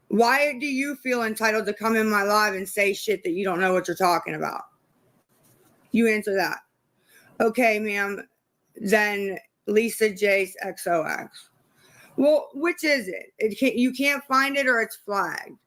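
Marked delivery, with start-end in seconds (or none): 0.1-6.6 fed-up, exasperated, aggravated, confrontational. Answering chat commenters on a live stream who call the speaker entitled: aggravated. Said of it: "I'm aggravated".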